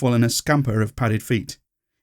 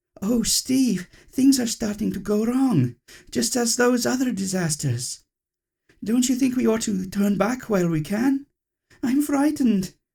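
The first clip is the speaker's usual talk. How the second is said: very high, frightened, scared begging plea; 10 semitones higher than usual. A narrator reads Venus begging Steve to turn back; Venus pleading. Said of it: "pleaded Venus. / pleaded Venus".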